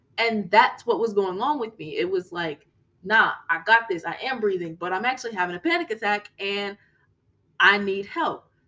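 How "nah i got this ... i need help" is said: normal talking voice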